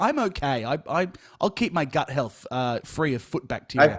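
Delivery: ordinary talk, nothing marked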